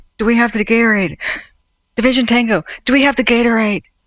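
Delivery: mock-desperate voice. Mimicking a radio caller who makes every call desperate, imitating Desperation Guy's desperate call. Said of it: "He makes every radio call desperate".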